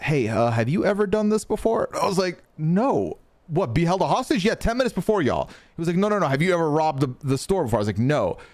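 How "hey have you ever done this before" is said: much higher whisper. Retelling what a hostage-taker whispered to the speaker, imitating a whisper. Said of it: "whispers to me and says".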